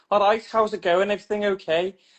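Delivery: put-on Scouse accent. Imitating your sister coming in with a new voice, in a Scouse accent. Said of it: "she had this Scouse voice".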